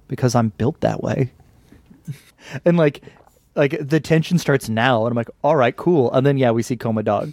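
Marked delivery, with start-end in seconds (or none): 0.1-1.3 put-on quiet, sad character voice. Retelling a scene where Keith Turtle answers a complaint, Keith Turtle, mock-sad and very quiet. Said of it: "just very quietly and sadly goes".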